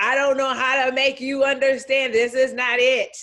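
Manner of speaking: full-on high, loud screaming. Voicing one's own body scolding, mock screaming. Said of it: "was screaming at me".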